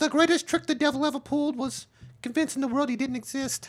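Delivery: squeaky, very high-pitched voice. Saying a famous movie line in a first-ever Tyson impression: Mike Tyson impression. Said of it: "I never did a Tyson before".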